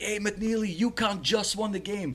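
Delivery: mock very high, loud screamed calling. Speaker recounts a fan in the next section screaming down to someone: retelling a fan screaming. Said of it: "he's like screaming down to McNeely".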